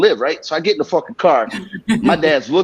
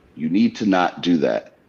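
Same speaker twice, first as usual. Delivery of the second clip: acted, utterly calm, slow, measured voice; 10 semitones lower than usual. Retelling what an angry father said: imitating a very calm voice. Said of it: "he said the calmest shit in the world".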